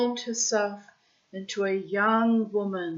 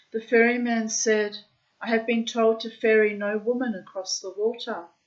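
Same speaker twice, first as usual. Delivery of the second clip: ordinary delivery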